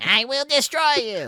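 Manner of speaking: very high, loud, squeaky goblin voice. Voicing a goblin that repeats a player's words back: goblin mimicking a player. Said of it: "It's just mimicry".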